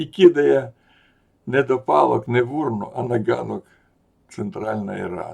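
high, loud shaming call-out.

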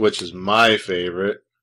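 dry, slightly low sarcasm. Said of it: "in case you can't tell I'm being sarcastic".

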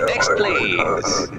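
low, loud called-out shout.

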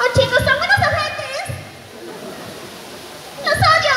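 high, nasty, shouted cartoon character voice.

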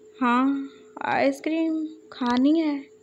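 sleepy, drowsy, half-asleep voice. Falling asleep in the car, answering his brother, in a sleepy voice. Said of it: "सोई हुई आवाज़ में बोल रहा था".

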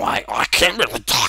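slow, clumsy, badly done duck-quack voice. Showing that you can't do the impression well, give your best attempt, a bad Donald Duck impression. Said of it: "That's my best attempt".

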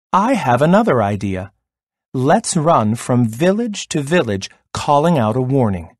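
plain

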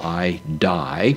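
ordinary delivery

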